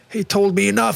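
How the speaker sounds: play-acted, high-pitched hollered shout. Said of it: "Han skriker då".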